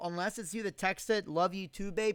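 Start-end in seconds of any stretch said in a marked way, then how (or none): none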